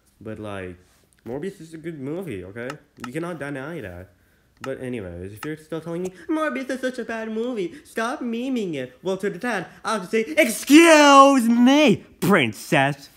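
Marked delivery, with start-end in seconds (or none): 10.2-13.0 booming, very high, shrill, over-aggressive shout. Answering people who call Morbius a bad movie: too loud and aggressive. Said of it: "that was too loud and too aggressive".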